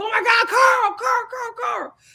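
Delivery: very high, berserk, frenzied excitement, acted out. Retelling the boys rushing over to Prince Naveen, imitating them going berserk. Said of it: "everybody goes berserk".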